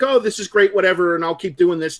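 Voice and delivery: ordinary talk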